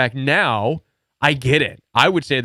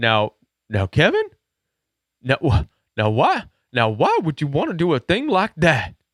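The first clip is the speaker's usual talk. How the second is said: put-on swooping old rural country grandpa voice. Speaker retelling his grandpa's reply in a high-school conversation, imitating grandpa's country voice. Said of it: "in his uh, country voice".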